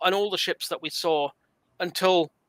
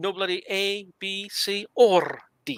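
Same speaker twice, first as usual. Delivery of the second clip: put-on Scottish accent, drawn out very slowly; 3 semitones higher than usual. Repeating a quoted line after being asked: scottish accent. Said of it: "in the Scottish accent".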